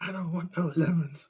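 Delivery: high, very loud, yelled protest-like shout. Picturing the listener shouting at spirit throwing lemons, imitating someone shouting. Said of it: "you're just shouting like".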